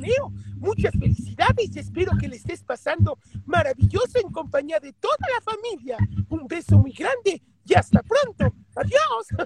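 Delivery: very high, squeaky, swooping cartoon voice. Answering a listener's request for a birthday greeting to Neo, Mickey Mouse voice. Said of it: "con la voz de Mickey Mouse".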